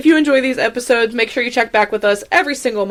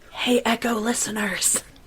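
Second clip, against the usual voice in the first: fake whispering, quieter; 9 dB quieter than usual. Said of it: "just whisper at you".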